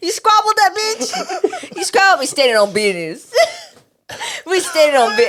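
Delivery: laughing mock taunting, high and loud, laugh-crying.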